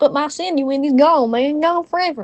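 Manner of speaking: terrible, clumsy put-on Texan accent. Voicing a man in a comic role-play scene: terrible Texan accent. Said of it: "So I'm gonna do a Texan accent".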